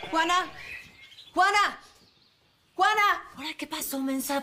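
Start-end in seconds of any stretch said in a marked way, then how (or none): 0.1-3.2 high, shouted calls. In a drama scene, calling for someone, who then asks why the shouting: shouting a name. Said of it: "¿Por qué gritas así?".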